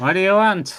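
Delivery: put-on loud old hobgoblin woman voice. Game master voicing an old hobgoblin woman who appears before the players; old hobgoblin woman voice. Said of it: "stands a old hobgoblin woman".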